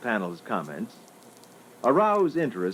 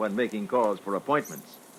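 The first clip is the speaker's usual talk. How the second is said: usual speaking voice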